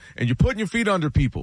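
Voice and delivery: ordinary talk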